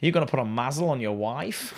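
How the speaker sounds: put-on Australian fella's accent. Retelling a stranger's remark to his mate, overheard in passing, in an Aussie accent. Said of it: "in an Aussie accent".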